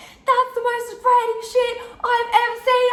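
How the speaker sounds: put-on very high, out-of-control, raging scream. Retelling a scene in a club, imitating own screaming. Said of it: "screaming. I'm like".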